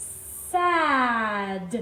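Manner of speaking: words sounded out slowly, sounds stretched out. Showing how to blend letter sounds into a word: sounded out slowly. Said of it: "Let's say it slowly together".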